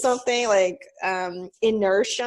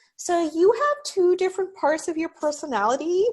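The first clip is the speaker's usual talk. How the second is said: high-pitched put-on voice; 5 semitones higher than usual. Impersonating a brother-in-law giving an astrological reading, in a high-pitched put-on voice. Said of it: "I'm doing like high-pitched voice for impersonation of him".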